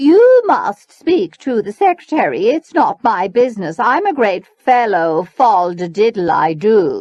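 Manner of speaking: very loud, arrogant, haughty and superior. Reading a story, a woman answers a parent asking about payment: haughty voice. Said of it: "assumed a haughty voice".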